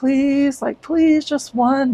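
repeated, imploring, pleading begging. Retelling how a date kept asking for something: imitating someone begging.

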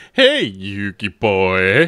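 character voice dropped low, swooping through the words. Explaining how a dubbed character talked, doing Pegasus voice. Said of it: "he had that very particular".

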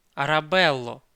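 pleading. A man calls after the young woman trying to leave, pleading exclamation. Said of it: "благально вигукнув він".

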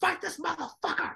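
very high, raspy, rough yell. Retelling a trainer yelling at his fighter in the corner: imitating Emanuel Steward yelling. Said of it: "and it starts yelling".

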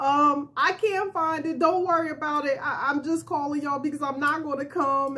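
mock weepy, boo-hoo, tearful, crying plea. Retelling a phone call saying they would not come: imitating own past crying.

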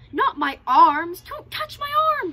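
very loud, high, shrill screech. A man lying in a ditch, as Birbal tries to lift him, screeching. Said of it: "Screeched the man".

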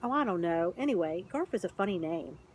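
ordinary delivery

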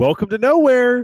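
put-on cheerily ominous shout. Retelling what a guy on the patio shouted at them, retelling an ominous, cheerful shout. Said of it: "kind of, like, ominously, but, like, cheerfully".

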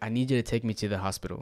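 put-on crying, tearful voice. Retelling a friend's phone call asking for a hospital ride: imitating someone crying. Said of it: "So it sounded like she was crying".

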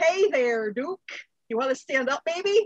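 put-on Upper Midwest Minnesotan accent. A game player speaks in character to Duke: Minnesotan accent. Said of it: "I just turned into a Minnesotan".

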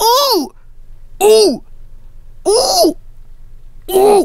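very high, squeaky, repeated yelps. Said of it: "he goes".

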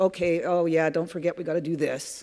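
mock grudging, dismissive, reluctant eye-roll tone. Imitating people who grudgingly acknowledge something, mock-dismissive eye-roll tone. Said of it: "Kind of that eye roll in the voice".

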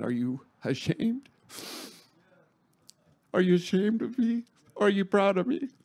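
voice catching with emotion. Retelling what God said to them about the tie, choked up. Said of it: "I didn't think I'd get choked up".

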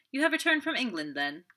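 breezy light exclamation. Meeting two men leaving a building, a man greets one of them: crying out airily. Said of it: "he cried airily".

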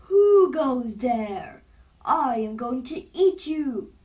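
thundering, very loud, slow booming troll roar. A huge green troll jumps onto the bridge before a baby goat, loud booming shout. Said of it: "it shouted in a loud, booming voice".

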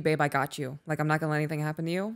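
plain

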